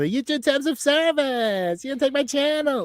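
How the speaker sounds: very high-pitched, squeaky put-on streamer voice. Imitating k b complaining about the channel: k b voice. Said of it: "you had the fucking K B voice on".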